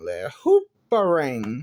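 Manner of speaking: animated creature voice, pitch swooping wildly up and down. Retelling a Pokemon movie scene, doing a Hoopa impression. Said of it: "That was my impression of uh, Hoopa from Pokemon".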